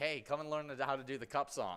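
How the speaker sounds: ordinary talk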